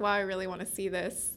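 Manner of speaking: plain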